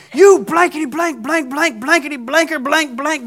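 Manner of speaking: very high, loud, shrieking screaming. Retelling a woman on a train screaming at a man, imitating a woman screaming. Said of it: "she is screaming at him".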